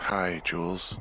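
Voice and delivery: groggy, tired, sleepy just-woken voice. Just woken up and answering the radio, greeting the caller, tired voice. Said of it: "you sound tired".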